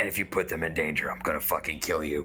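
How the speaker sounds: very quiet, menacing voice. Voicing a character who walks up to another: very quiet threat. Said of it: "he's gonna walk up to Pongu and very quietly go".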